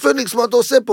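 put-on, excited, eager, bursting with enthusiasm. Retelling how a contractor came up to him, imitating an enthusiastic greeting. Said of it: "בא אליי בהתלהבות".

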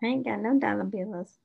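normal talking voice

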